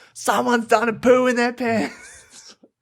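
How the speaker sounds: very high-pitched, drawn-out calling yell. Retelling how a friend loudly called out a smell: imitating someone yelling. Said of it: "you were just, like, yelling it out".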